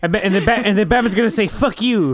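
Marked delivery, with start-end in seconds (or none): 1.5-2.2 put-on cartoon kid voice, higher. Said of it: "sounds like Eric Cartman".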